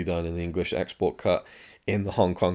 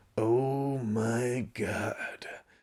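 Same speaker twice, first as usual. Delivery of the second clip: exaggerated dramatic voice, pitched higher; 5 semitones higher, 4 dB quieter than usual. Mocking people who overdo an impression: bad Charlton Heston impression. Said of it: "a bad Charlton Heston impression, people going to the extremes".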